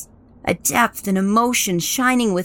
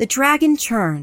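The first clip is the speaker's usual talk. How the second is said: ordinary delivery, nothing marked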